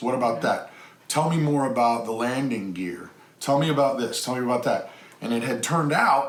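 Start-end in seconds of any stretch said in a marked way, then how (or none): none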